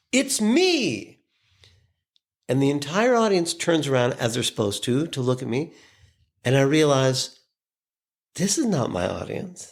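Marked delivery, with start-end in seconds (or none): 0.1-1.1 acted-out very high shout, me drawn out long. Retelling bursting into a room, imitating own shout. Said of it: "I burst in and shout".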